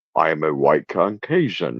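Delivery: very low, deep put-on Southern accent.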